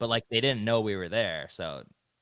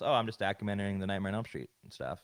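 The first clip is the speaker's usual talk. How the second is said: ordinary talk, nothing marked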